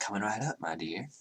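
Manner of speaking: soft, hushed, eerily courteous murmur. At the bar, Nemeth answers the ranger's request for another drink in an unnervingly polite voice. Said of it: "in that unnervingly polite voice".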